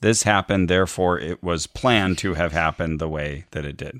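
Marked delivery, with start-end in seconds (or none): none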